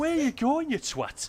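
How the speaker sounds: put-on over-the-top, very high-pitched northern English accent. Repeating what the other person once said, cartoonish northern English accent. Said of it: "the cartoonishly northern accent".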